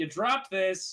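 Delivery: put-on small, childlike little kid's voice. A player's character taps a gnome's shoulder to hand back the key: little kid's voice. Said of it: "says in like a little kid's voice".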